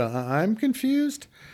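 put-on small childlike little-kid voice, rising high. Retelling own reply to god: imitating own voice rising like a little kid. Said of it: "the whole voice going up, little kid kind of thing".

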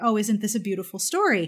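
ordinary delivery

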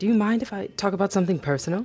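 abrupt, sudden, blurted. At the dinner table, Layla suddenly turns to Mimi, abruptly asking. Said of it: "Layla turned to Mimi and abruptly asked".

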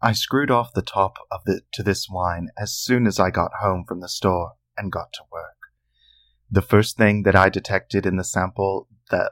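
audiobook narrator voice, storyteller reading aloud. Reading Stuart's long-winded recipe aloud for listeners, audiobook narrator voice. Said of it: "I'm going to read it like an audiobook".

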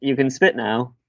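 ordinary delivery

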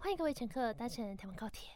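put-on cutesy announcer voice. Imitating the train announcer, in a super cutesy, coy voice. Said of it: "他声音超爆嗲的".

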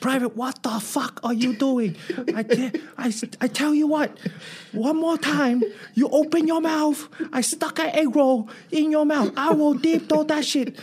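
put-on Chinese accent. Retelling how he yelled at a private while his first sergeant watched, total Chinese accent. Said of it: "I went total Chinese accent".

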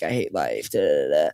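low, droning monotone. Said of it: "her character's kinda monotone".

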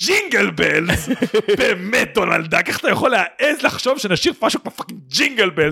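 put-on offended, indignant tone. Recapping a video where one man answers Donaldek, mock-offended tone. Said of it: "ורואים את הטון נעלב שלו".

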